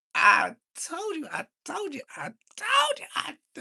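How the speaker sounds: very high, swooping preacher shout. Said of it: "I'll start shouting like a Sunday service".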